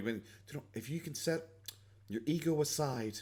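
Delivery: put-on gentle voice, very quiet and slow. Mocking how someone sounds when he puts on a soft voice: imitating Boogie's soft slow voice. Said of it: "Boogie putting on his, like, soft voice where he's, like, slowly".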